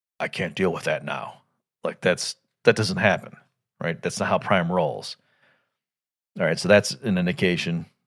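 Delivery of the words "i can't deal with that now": put-on flustered voice, much lower and quieter. Describing a scene that never happens in the series, the speaker voices Optimus Prime's reply, mock-flustered Optimus Prime. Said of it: "in a flustered voice".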